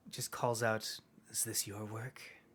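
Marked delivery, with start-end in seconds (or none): 1.3-2.2 hushed, half-whispered hiss drawn through the teeth. Voicing a woman at the gatehouse who calls out without looking, in a hissing half-whisper. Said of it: "in a hissing whisper".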